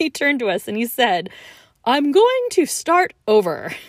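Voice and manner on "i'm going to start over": enormous, strong, loud, high, booming theatrical declaiming. Retelling what a performer proclaimed to the audience, in a mock enormous, strong voice. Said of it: "proclaimed in this like enormous, strong voice".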